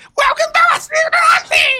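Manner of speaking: very high, loud, slow screech. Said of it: "the screech worked".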